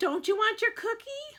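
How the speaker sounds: very high, piping, coaxing voice. Reading a woman's line to the narrator in a story, high-pitched voice. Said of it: "the woman asked in a high-pitched voice".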